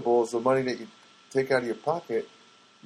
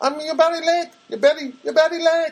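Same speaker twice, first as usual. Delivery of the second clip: imitated Filipino accent, much higher pitch; 4 dB louder than usual. Retelling a therapist telling a patient he's late: imitating Anna's Filipino accent. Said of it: "She says in the Filipino accent".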